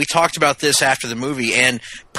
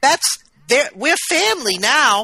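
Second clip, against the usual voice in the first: cartoonish put-on voice, much higher; 12 semitones higher than usual. Describing a film where characters call each other family, horrible Harley impression. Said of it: "That's a horrible Harley impression".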